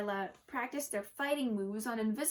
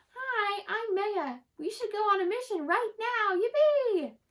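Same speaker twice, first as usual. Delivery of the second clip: loud, very high, squeaky little voice; 10 semitones higher, 7 dB louder than usual. Reading a girl speaking for her cat, waving its legs: squeaky voice. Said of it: "she spoke in a squeaky voice".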